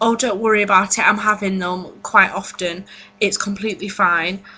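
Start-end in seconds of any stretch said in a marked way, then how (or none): none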